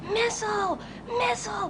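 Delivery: high-pitched, alarmed yelling.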